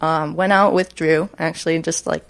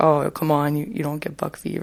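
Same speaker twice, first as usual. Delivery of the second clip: put-on taunting, mocking, scoffing voice; 4 dB quieter than usual. Retelling what other hunters say about buck fever: imitating people mockingly. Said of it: "why are you mocking those guys with that voice".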